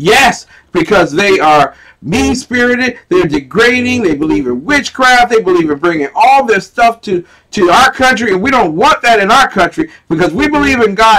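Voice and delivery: put-on worked-up, upset, high, loud outburst. Retelling a woman's reply to a question about her country, imitating an upset woman. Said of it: "she got very upset about that".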